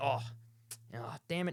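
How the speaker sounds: beaten, resigned, deflated, defeated tone. Retelling walking back to his mates, hands behind his back, acting out sounding defeated. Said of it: "just being like a sort of defeated".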